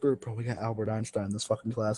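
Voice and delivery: soft, hushed, leaned-in half-whisper. Retelling what a friend leaned up and said in a silent class: imitating Emery half-whispering. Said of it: "just whisper".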